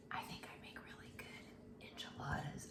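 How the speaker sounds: soft, hushed, confiding whisper. Talking to listeners, then apologizing for it: whispering. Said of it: "Sorry, I'm whispering".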